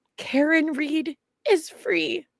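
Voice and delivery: put-on very high, slow, drawn-out tearful bawling. Retelling telling a five-year-old son the news: retelling own words said crying. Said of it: "And I'm, like, crying".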